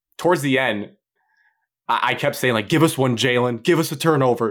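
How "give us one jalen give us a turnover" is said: light, play-acted calling out, like cheering from a crowd. Retelling what he kept yelling toward the end of the game, retelling a yell. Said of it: "yelling it".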